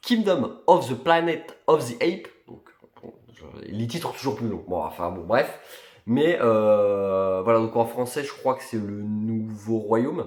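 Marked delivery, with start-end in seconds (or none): 0.0-2.3 English accent with raised pitch. Talking about films, the speaker says an English movie title in an English accent. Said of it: "excusez-moi pour l'accent anglais".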